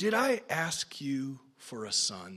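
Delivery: mock aching, accusing tone, very low and hushed. Quoting the woman in 2 Kings 4, retelling in a pained voice. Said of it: "can you hear the pain in her voice?".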